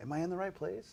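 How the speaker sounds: very high, hushed, soft voice. He knocks on the door while everyone is waiting for rehearsal; do it in a Mister Rogers voice. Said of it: "he does like in his voice".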